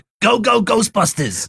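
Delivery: exaggerated New York accent. Recalling wanting them to hear a New Yorker, New York accent. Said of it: "Why did you feel the need to do a New York accent".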